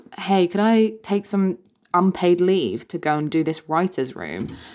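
ordinary talk

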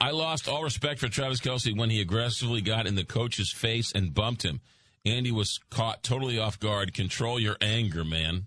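ordinary delivery

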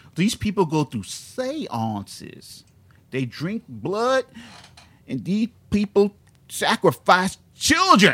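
put-on slow, loud, dopey Southern accent, preacher-style delivery. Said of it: "I'm just gonna do a dumb Southern accent".

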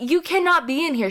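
mock panicked, frantic, high-pitched freak-out. Retelling a store cashier yelling about a missing mask: imitating a cashier freaking out. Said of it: "literally freaking out".

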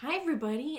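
said as sweetly as possible. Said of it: "the sweetest [name] voice".

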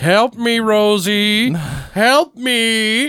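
very high, pleading ghostly voice, drawn-out "me". Describing a film's dead man calling to his family, imitating a dead man begging. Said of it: "the dead guy's voice begging for help".

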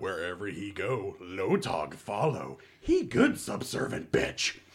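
low, swooping, swinging inner-monologue voice. Voicing Lotog following the others as they leave: Lotog inner monologue voice. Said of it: "Lotog speaking in inner monologue".

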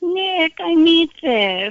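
dainty, fluttery, high little prissy voice. Retelling how an aunt called to the uncle, in a little fluttery voice. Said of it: "she had this little fluttery voice".

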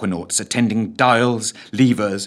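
ordinary delivery, nothing marked

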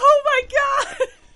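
very high, shrill, very loud excited shout. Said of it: "I'm so sorry for being so loud".

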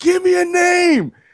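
very high-pitched, drawn-out scream. Retelling a moment at a fan panel: retelling own scream. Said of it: "I just screamed".

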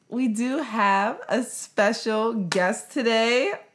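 put-on young girl voice.

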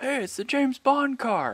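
high, slow, loud yelled voice.

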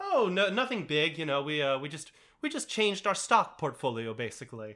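very casual, offhand, matter-of-fact delivery. Retelling how characters casually break shocking news: imitating a matter-of-fact tone. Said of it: "this very matter-of-fact".

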